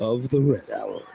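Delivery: low, smooth voice like a late-night host.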